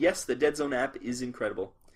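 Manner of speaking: ordinary talk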